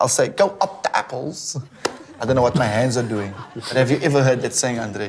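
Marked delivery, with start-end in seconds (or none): 0.3-1.6 bad Cockney accent, very slow whisper. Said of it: "But I'll try".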